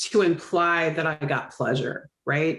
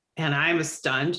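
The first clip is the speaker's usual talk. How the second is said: usual speaking voice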